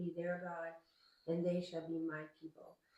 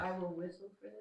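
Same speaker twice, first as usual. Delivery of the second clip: plain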